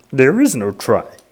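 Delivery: throaty voice, pushed from the back of the throat. Explaining how hard the voice is, a speaker demonstrates: Yoda voice, Kermit meets real frog. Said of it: "Kermit the Frog meets real frog".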